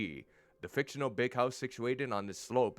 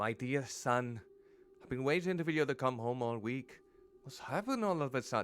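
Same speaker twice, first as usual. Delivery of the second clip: clumsy, bad put-on Irish woman's accent. Voicing a mother speaking to her son, in an irish mom's accent. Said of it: "I have to do it in the Irish mom's accent".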